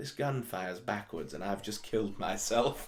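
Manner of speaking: put-on sorry, downcast, really sad mournful voice. Recalling a film scene where a gun goes off, quoting the line: imitating a sad voice. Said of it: "this really just sort of sad voice goes".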